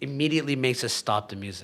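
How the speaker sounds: ordinary talk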